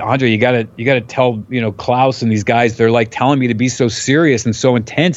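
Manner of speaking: plain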